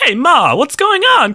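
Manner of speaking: mock New York everyman accent. Imagining how an actor would voice a baby role: Bruce Willis impression. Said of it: "Bruce Willis ... New York everyman character, so he'd be like".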